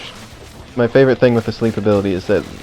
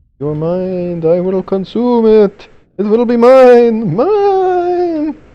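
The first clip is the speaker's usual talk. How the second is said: bad spooky put-on voice, much higher, louder; 12 semitones higher, 6 dB louder than usual. As things get spooky in the game, the speaker switches into a terrible spooky put-on voice. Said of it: "this voice is terrible".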